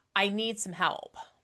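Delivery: ordinary talk, nothing marked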